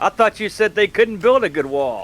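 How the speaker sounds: high, slow, laughing taunting jab. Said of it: "I'm gonna laugh and be like".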